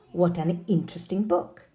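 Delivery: ordinary talk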